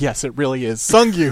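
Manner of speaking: mock deadpan, flat unchanged tone. Retelling a scene, the speaker voices Songmin answering Pung: imitating a deadpan reply. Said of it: "without changing his tone of speech".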